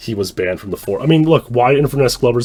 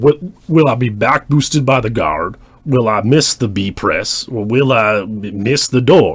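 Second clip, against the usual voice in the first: put-on speaking voice, stumbling and faltering. Repeating lines from a just-played clip, imitating Glover's voice. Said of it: "I can't do this voice".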